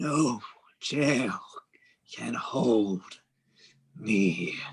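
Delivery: trembling, hoarse put-on character voice. Reading a story, the Baron speaks as he is led away, trembling raspy voice. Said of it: "The Baron speaks in a trembling, raspy voice".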